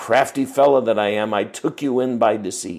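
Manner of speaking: ordinary talk, nothing marked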